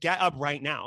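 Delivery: put-on stern, commanding tone. Retelling ordering someone to get up: imitating own stern order. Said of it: "very professional, but very stern".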